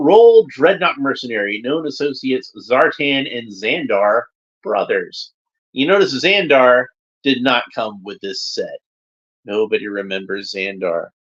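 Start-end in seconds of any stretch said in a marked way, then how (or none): none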